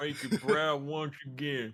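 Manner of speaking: put-on New York accent. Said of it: "you New Yorker".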